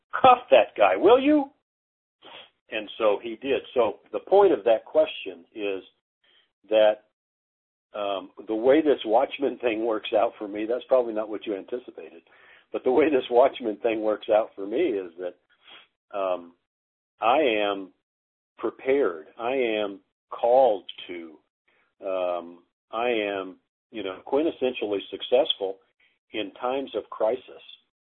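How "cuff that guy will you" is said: loud, high-pitched yelling. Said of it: "I just yelled at the lieutenant".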